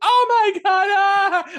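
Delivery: fake, very loud, very high, drawn-out shriek. Recounting a Dark Knight Rises scene, imitating Anne Hathaway's fake scream. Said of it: "She starts screaming".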